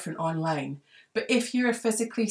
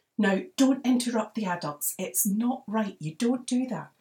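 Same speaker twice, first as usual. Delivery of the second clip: mock scolding telling-off tone; 3 semitones higher than usual. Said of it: "don't let your mum's voice get in your head".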